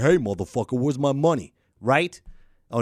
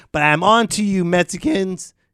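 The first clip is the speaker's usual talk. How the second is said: voice cracking, much slower; 6 semitones higher, 5 dB louder than usual. A Puerto Rican speaker teasing Mexicans, voice cracking. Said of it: "My voice cracked".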